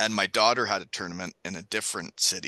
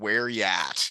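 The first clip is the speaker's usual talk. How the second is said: normal talking voice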